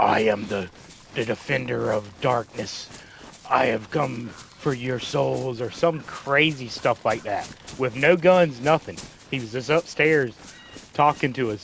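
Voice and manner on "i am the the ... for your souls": spooky, dark, creepy would-be villain voice. Retelling a man upstairs who talked to them: dark, creepy wannabe voice. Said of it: "He was doing some kind of dark, creepy wannabe voice".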